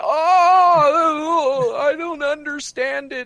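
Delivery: put-on very high, very slow, shrill old-person voice. Speaker mocking old people flipping out about it, mocking old-person voice. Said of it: "says all the old people".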